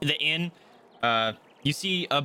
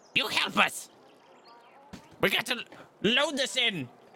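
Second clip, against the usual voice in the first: very high, gruff little gnome voice; 10 semitones higher than usual. Voicing the gnome leader as the group walks out: best gruff gnomish voice. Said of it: "says in his best gnomish gruff voice".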